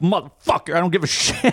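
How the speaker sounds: angry muttered mumble under the breath. Retelling cursing at a self-checkout while a worker approaches: imitating own angry mumbling. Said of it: "I'm mumbling to myself".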